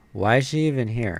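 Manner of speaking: ordinary delivery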